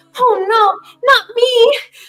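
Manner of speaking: put-on voicing a child character. Voicing a child who backs away from an attacker: child character voice. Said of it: "see you attacking a child".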